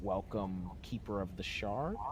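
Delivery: plain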